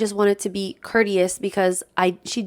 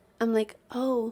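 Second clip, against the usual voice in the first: ordinary talk, nothing marked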